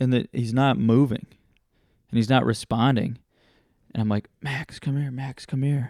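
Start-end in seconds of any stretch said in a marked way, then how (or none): 4.4-5.9 soft, hushed stage whisper. Retelling calling a cousin from the woods: retelling a half-whisper. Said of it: "And so I'm whispering to him".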